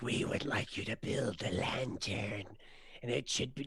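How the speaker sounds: hushed, breathy, barely whispered voice. After a successful performance check, imitating the Dragonborn's voice: impersonating the Dragonborn. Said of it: "the voice of this Dragonborn".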